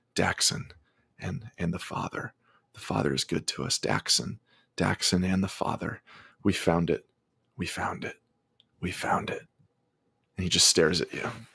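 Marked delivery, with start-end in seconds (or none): 0.1-9.4 whispered, hushed, breathy, repetitive muttering. In a tabletop game, the game master voices a man answering the players, muttering. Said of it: "he just kind of starts muttering".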